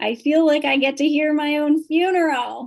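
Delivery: loud, high hollering mother voice. Retelling what your mother hollered from her wheelchair during retirement party speeches, in my mom's voice. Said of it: "I'm going to do this in my mom's voice".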